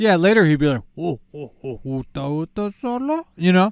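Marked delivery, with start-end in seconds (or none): 1.0-3.3 very slow, heavy, drawn-out drawl. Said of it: "he's gonna get the accent that they all get".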